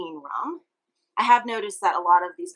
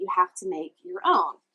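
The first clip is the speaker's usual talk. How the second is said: put-on broad, very thick Jamaican accent laid on heavy. Retelling a woman's answer when asked the syrup's name, thick Jamaican accent. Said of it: "in a very thick Jamaican accent".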